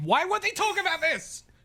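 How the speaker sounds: put-on shrill, very high-pitched shouting yell. Recalling a night watching a show, retelling yelling at the TV. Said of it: "yelling at my T V".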